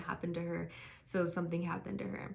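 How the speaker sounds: normal talking voice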